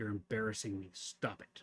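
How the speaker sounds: mock low, flat, dead-serious, no-nonsense deadpan. Retelling how the daughter told Dad to stop: imitating daughter, mock dead serious. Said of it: "these dead serious resting bitch face".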